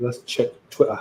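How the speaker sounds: put-on British accent. Reading out the next thing to check: British accent. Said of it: "in my British accent".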